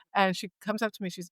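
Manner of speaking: ordinary delivery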